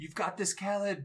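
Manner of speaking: high, yelled, rallying encouragement. Playing a bard in a tabletop game, encouraging a party member, yelling out encouragement. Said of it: "And basically yell out".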